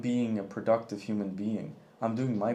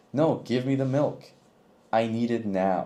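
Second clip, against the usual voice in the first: unhinged, psychopath-sounding voice; 5 dB louder than usual. Showing how to ask for something bluntly when in a rush: psychopath-sounding demand. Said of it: "I sound like a fucking psychopath".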